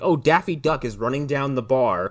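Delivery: normal talking voice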